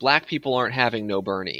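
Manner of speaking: plain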